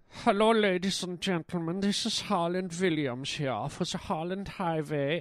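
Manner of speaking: muddled, mixed Swiss German and Polish accent. Host opening his show, talking like a Swiss, German, Polish guy. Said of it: "I don't know why I'm talking like a Swiss, German, Polish guy".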